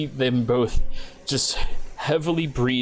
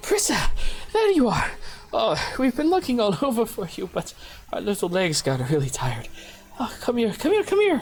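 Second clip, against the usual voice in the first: very high pitch swooping around; 10 semitones higher than usual. Voicing a mother who finds her child and calls her over: voicing Prissa's mother. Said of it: "Prissa's mother turns around and goes".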